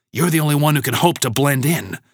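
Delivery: quick, rushed, secretive, conspiratorial urging. [name] replies to Alex: hushed voice. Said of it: "still using a hushed voice".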